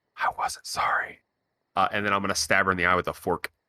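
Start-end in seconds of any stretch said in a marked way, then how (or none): 0.2-1.2 soft, very quiet whisper right at ear. Your character gets real close to a sleeping woman's ear, quiet whisper. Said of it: "just real quietly whisper".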